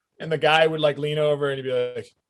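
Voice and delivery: ordinary talk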